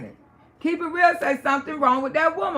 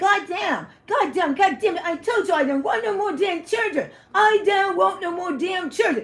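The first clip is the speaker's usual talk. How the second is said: mock furious, angry, fed-up, worked-up rant; 3 semitones higher than usual. Retelling how Daddy reacted to the vasectomy: imitating Wood angry and upset. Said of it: "He really got so goddamn effing upset".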